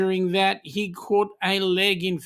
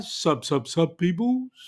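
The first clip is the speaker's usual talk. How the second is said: on-air radio presenter voice. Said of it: "I can't do the Jonesy radio voice".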